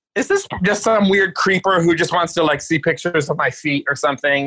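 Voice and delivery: normal talking voice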